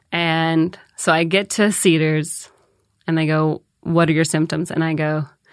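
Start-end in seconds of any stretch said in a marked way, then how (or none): none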